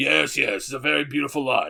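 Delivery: rough, creaky, rasped anime warrior voice. Retelling a stranger's remark about a long line: Vegeta voice. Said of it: "in the voice of Vegeta from Dragon Ball Z".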